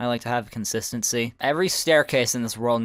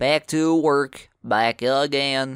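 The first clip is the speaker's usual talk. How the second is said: playful, joking, put-on rural Southern US accent; 3 semitones higher, 4 dB louder than usual. Heading back inside to sleep, the speaker says this in a joking redneck accent. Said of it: "Why am I saying this like a redneck?".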